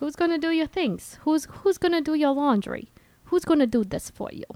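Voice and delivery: put-on light Brooklyn accent. Retelling how a man's mom reacts to him cooking, with a little Brooklyn accent. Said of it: "I'm getting a little Brooklyn".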